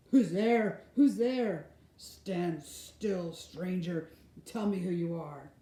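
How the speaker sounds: loud, growling, challenging beast voice. Reading a story, a huge creature challenges a stranger: growling voice. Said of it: "said in a growling voice".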